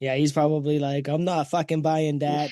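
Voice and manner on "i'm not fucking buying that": mock Boston accent, higher pitch. Imagining what a guy on Android would say: imitating a Boston accent. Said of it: "or whatever the Boston accent is".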